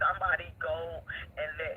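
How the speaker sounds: ordinary delivery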